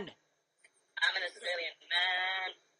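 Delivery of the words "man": emphasized 'man' with drawn-out vowel. Coaching another performer on how to read a line, stress on 'man'. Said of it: "Stress the vowel".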